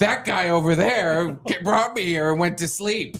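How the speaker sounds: mock angry woman voice. Retelling what an upset woman kept saying: imitating an angry woman. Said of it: "she was really mad".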